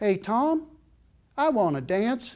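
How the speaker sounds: put-on high-pitched little girl's Texas accent. At a kids' dance, retelling what the girl beside him said, in Molly's little Texas accent. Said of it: "in her little Texas accent".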